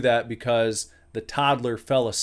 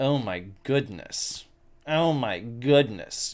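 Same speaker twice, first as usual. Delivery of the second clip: put-on slow, haughty, scandalised, snooty old-lady disapproval. Retelling what a snooty old lady said on walking by: imitating a snooty old lady. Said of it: "She looks over with this kind of".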